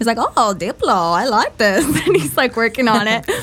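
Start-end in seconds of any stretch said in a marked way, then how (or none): 0.2-1.8 put-on, sing-song German accent of an older man. Quoting an older German man's reaction to a [name] groove: put-on German accent. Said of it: "German accent. ... That's just how [name] sounds".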